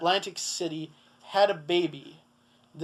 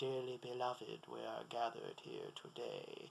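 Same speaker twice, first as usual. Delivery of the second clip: bad put-on spooky horror voice, lower and quieter; 7 semitones lower, 20 dB quieter than usual. Imitating a voice heard in his head: horrible Vincent Price impression. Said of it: "That was a horrible Vincent Price impression".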